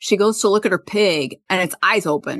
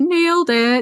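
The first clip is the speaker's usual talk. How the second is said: high, pitched-up put-on falsetto voice; 9 semitones higher than usual. Retelling what a character says in a scene: imitating a high-pitched voice. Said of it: "high pitch".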